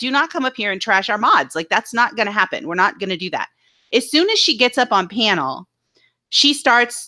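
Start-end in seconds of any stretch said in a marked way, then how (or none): none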